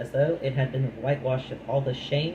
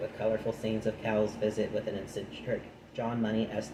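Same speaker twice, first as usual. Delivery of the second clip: ordinary talk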